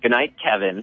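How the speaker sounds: put-on very snotty, bratty, sassy child voice. Retelling a movie scene where the kid answers his mom: imitating a snotty kid. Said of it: "in a very snotty voice".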